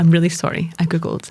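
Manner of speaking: mock apologetic, patient tone. Retelling how patients admit to searching their symptoms: imitating an apologetic tone. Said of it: "they always say it with an apologetic tone".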